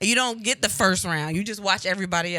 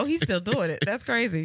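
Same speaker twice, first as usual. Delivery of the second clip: plain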